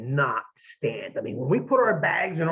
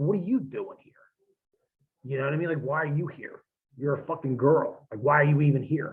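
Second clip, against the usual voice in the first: mock snippy tone with attitude. Retelling answering her with the same attitude: retelling his own attitude. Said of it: "so the same attitude, I look at her".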